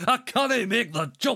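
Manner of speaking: put-on Scottish accent, very high pitch. A player speaks in character while the others guess the voice, Scotty impression. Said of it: "Why does he sound like fucking Bones?".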